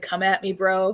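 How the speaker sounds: ordinary talk, nothing marked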